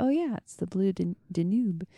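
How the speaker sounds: ordinary talk, nothing marked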